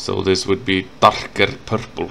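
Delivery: Icelandic-accented speech. Showing how the color name sounds the Icelandic way, thick Icelandic accent. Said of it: "with a thick Icelandic accent".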